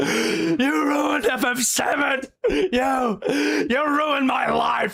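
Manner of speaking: very high, slow, dragged-out fake drunken rant. Acting out an imagined scene of being dragged off stage: pretend drunken outburst. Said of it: "with a half-drunk bottle of whiskey, just being like".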